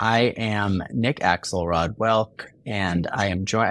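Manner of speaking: flat, mechanical, robot-like voice. A podcast host introduces the show, sounding like a robot. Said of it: "I sound like a robot".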